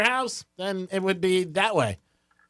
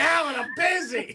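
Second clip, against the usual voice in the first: pitched-up, shouted, yelling voice; 8 semitones higher than usual. Telling a caller what to yell at his brother-in-law: mock yelling at someone. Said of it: "just start yelling at him".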